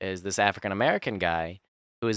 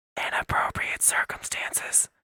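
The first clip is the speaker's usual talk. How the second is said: breathy, hushed whisper, very close. Retelling what a wife said close in his ear: imitating a whisper. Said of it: "she whispers it".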